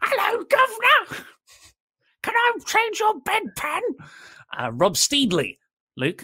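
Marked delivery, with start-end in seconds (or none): 0.0-3.8 very high lower-class Victorian woman's accent. Joking about common Victorian-era women, in a common Victorian woman accent. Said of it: "the accent most of the women have, who are common".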